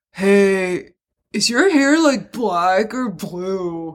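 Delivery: slow, glazed-over stoned drawl, long drawn-out hey. Retelling what a stoned guy at a pizza place asked: imitating a stoned guy. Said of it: "he looked stoned as fuck".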